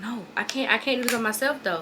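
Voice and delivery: ordinary talk, nothing marked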